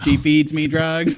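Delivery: mock speech-synthesizer voice. Retelling a video of a man using a robot voice: imitating a robot voice. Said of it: "he has, like, a robot voice and he's going".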